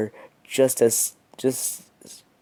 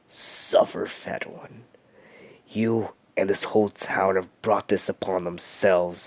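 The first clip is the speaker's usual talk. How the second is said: low, almost satanic, demonic whisper; 4 semitones lower, 4 dB quieter than usual. Narrator reads a story, quoting the character: SpongeBob's low demonic whisper. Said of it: "in a low, almost satanic, demonic voice. He whispered".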